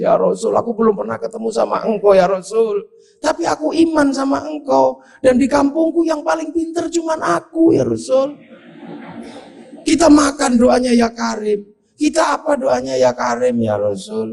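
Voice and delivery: put-on begging while openly crying, high. Retelling a villager hugging the Prophet and begging: acted crying while pleading. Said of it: "nangis orang ini".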